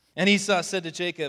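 plain reading voice

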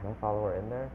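ordinary talk

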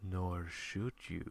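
gentle, comforting, soothing whisper, very soft. The audience comforts a nervous first-time poster with a soothing whisper. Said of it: "whispered the audience soothingly".

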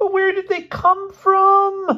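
piercing, shrill, very high shriek, stretched out. A man confronts his roommate over underwear found in their room, shrieking. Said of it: "Elmer shrieked".

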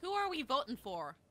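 put-on Irish accent. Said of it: "Why did you change to Irish?".

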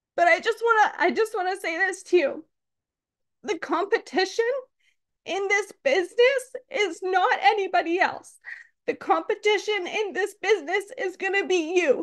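near tears. Speaking to the audience about launch results, tearful. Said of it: "So I'm sorry if I'm going to cry".

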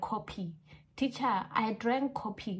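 put-on Korean accent, f in coffee said as p. A teacher retells what students say, imitating their Korean accent. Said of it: "they have their own Korean accent".

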